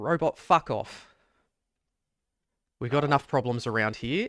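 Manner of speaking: weary, fed-up dismissal on a sigh. A game narrator voices the man who called out to the player: with a sigh. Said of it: "you see him just sigh".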